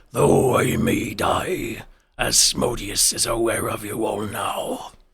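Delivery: deep, swooping, rumbling monster voice. Narrating a fight, the game master voices the Minotaur: rumbling Minotaur voice. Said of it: "You hear its voice kind of rumble out".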